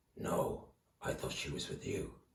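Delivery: breathy, hushed, soft growl under the breath. Narrating action figures in battle, Batman answering Superman, growly Batman voice. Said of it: "in that sort of growly voice".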